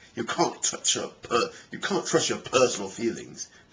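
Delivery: put-on English accent. Speaker quotes Richard Dawkins, redoing it in Richard Dawkins English accent. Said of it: "I always like to do the English accent".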